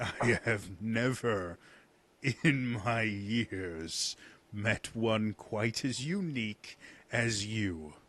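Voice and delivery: laughing while speaking in a dragon voice. Voicing an ancient dragon who laughs at a tiefling: laughing while speaking as the dragon. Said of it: "he's laughing. He's like".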